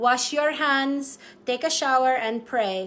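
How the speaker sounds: speaking in a put-on Filipino accent. Signing off, voicing what the speaker's late mother would say, in a Filipino accent. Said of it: "talking in my Filipino accent".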